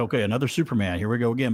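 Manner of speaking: ordinary delivery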